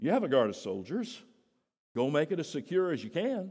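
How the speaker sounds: heavy put-on sarcasm in a regal ruler voice. Retelling a ruler's reply to the chief priests, imitating Pilate's sarcasm. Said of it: "There has to be sarcasm of the highest order".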